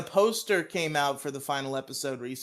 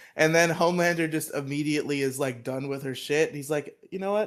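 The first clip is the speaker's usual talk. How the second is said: ordinary talk, nothing marked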